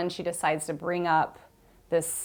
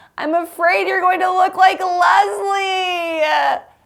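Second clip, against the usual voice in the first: put-on very high, loud baby-like sobbing; 13 semitones higher, 10 dB louder than usual. Retelling what a woman said to the speaker while sobbing, imitating crying like a little baby. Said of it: "she cries like I've never seen anyone cry, but like a little baby".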